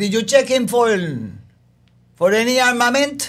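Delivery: put-on Latin American accent. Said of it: "she would talk like this".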